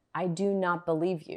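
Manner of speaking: do not hammered, heavy stress on each word. Repeating to someone who isn't hearing you: strong stress on do not. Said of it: "I may say it like this: ... because I'm emphasizing the do not".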